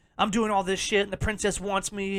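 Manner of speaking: plain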